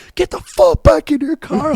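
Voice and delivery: shrill, very high screaming. Speaker retells standing up out of his car at a guy, retelling a scream at a guy. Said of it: "like like screaming at this guy".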